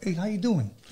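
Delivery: high, wise-guy gangster-movie voice. Imitating Joe Pesci coming up to someone: Joe Pesci impression. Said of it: "I like Joe Pesci when, like, he can come up to you and be like".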